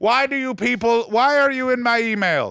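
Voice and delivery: high, loud Irish brogue. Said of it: "That was a good accent".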